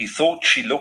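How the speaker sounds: plain reading voice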